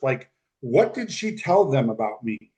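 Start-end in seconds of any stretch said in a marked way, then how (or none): none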